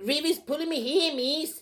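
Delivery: attempted Australian accent that comes out New Zealand. Doing an impersonation of the show Heartbreak High, in a put-on accent that sounds Kiwi. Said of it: "You sound like a Kiwi".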